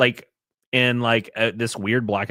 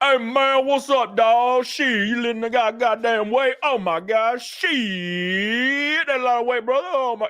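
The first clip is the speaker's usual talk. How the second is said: very high, put-on southern American accent; 12 semitones higher than usual.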